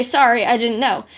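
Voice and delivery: plain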